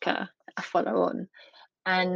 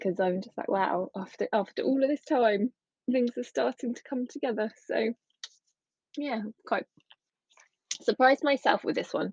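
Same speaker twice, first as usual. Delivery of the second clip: choked-up, tearful voice, emotion breaking through; 4 semitones higher than usual. Reflecting on things finally coming together, tearing up while talking. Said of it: "I'm tearing up just".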